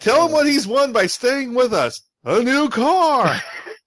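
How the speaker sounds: very high, loud game-show announcer voice. Joking about a studio sweetening a salary offer, speaker imitates The Price Is Right announcer. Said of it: "It's like the announcer from The Price is Right".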